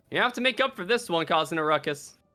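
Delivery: ordinary delivery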